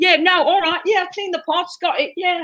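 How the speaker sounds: put-on British accent. Retelling eight hours of having to talk with a British accent, put-on British accent. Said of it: "you're British, you're British".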